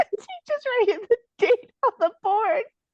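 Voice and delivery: laughing.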